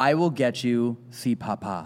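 put-on whisper in a ghost's voice. Retelling a recorded spirit voice from a cell block: imitating a ghost's whisper. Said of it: "it literally whispers".

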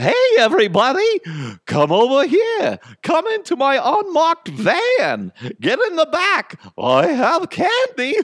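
very high, swooping, creepy clown voice. Speaker announces and performs their own clown voice: creepy clown voice. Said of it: "that's my creepy clown voice".

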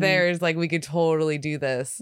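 ordinary talk, nothing marked

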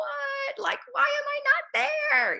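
put-on high screaming. Retelling watching the team win on TV: imitating own screaming at the TV. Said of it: "literally screaming at the T V".

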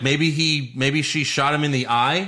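ordinary talk, nothing marked

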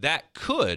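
stressed "could".

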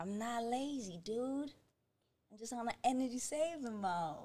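very quiet, soft surfer dude accent. Doing a line in an accent while friends guess which one, surfer accent. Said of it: "No, surfer".

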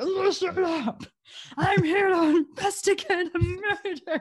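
very high, loud, slow, drawn-out bossy cop voice. Retelling how the main cop treats everyone: Nicolas Cage impression. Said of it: "Is that your Nicolas Cage impression?".

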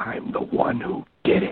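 chilling, breathy, barely voiced, hushed whisper. Narrating a true-crime case, quote the caller's answer to the dispatcher: terrifying whisper. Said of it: "responds in a terrifying whisper".

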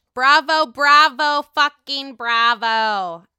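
loud, drawn-out mock cheer.

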